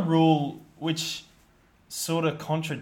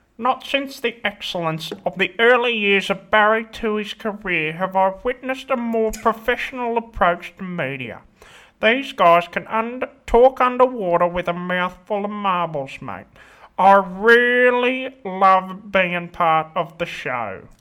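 put-on sports journalist voice, higher and louder; 3 semitones higher, 6 dB louder than usual. Reading out a five-star review in the reviewer's voice: Phil Rothfield voice. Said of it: "read that out in his voice".

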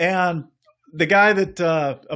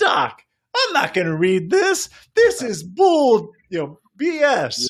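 high-pitched put-on voice, laughing; 6 semitones higher than usual. Retelling a funny read, imitating Tony Gwynn's high-pitched voice. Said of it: "In Tony Gwynn's high-pitched voice".

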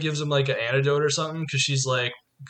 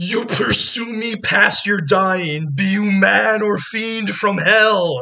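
high, loud, drawn-out terrified scream; 6 semitones higher, 8 dB louder than usual. Speaker retells a Batman scene as the villain faces Batman; retelling Ra's al Ghul screaming.

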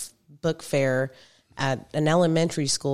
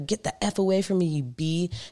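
mock yelling in a man's voice; 3 semitones higher than usual. Speaker imitates a man in a Walmart line yelling at them, imitating a man yelling. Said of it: "And he's yelling at me".

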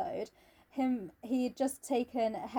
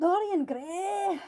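fake, badly done, high-pitched Scottish accent; 8 semitones higher, 4 dB louder than usual. Getting back to a book, the speaker says its title in a bad Scottish accent. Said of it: "fun to say with a bad Scottish accent".

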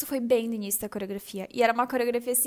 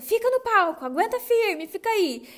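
mock very high shouting, slow and drawn-out; 10 semitones higher, 3 dB louder than usual. Retelling a teacher shouting from backstage during a performance: imitating someone shouting. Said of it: "o Raul ficava gritando".

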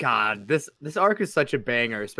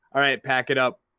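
ordinary talk

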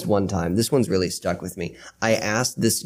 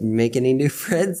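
higher-pitched motherly voice; 5 semitones higher than usual. Retelling what mother asks after a girl is mentioned: imitating mother. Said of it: "my mother's like".

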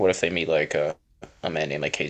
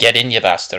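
strong put-on Scottish accent, higher, louder; 5 semitones higher, 7 dB louder than usual. Describing a character, the speaker quotes his line in a very scottish accent. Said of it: "in a very Scottish way".

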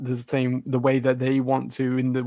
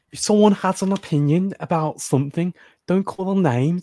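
bad put-on Scouse accent, slightly high pitch; 5 semitones higher, 4 dB louder than usual. Quoting Paul, the speaker puts on a terrible Scouse accent. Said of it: "that was a terrible Scouse accent".

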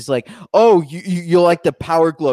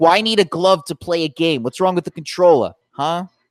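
put-on Northeast US accent, male voice. Retelling how they got into it, imitating a guy, in a Northeast accent impression. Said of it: "I could do this guy impression of him".

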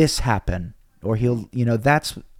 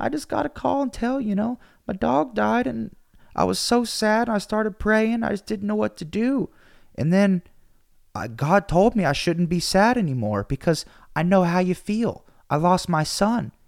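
mock very high, tearful, crying little boy voice; 9 semitones higher than usual. Retelling an eight-year-old's call, imitating a crying child. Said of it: "He's crying".

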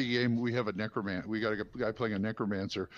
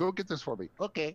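jokey, comic, pitched-up put-on Spanish accent; 6 semitones higher than usual. Describing a man's ventriloquism thing, imitating what he says in a Spanish accent. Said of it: "now all of a sudden he's got a Spanish".

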